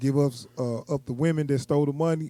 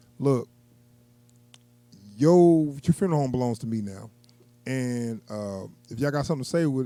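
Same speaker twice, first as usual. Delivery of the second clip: plain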